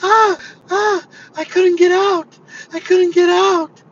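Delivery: put-on shrill, very high, very loud little old lady voice. Retelling how an old lady stuck in the back seat complained: imitating the little old lady. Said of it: "little old lady sitting in the back seat".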